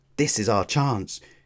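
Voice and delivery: ordinary talk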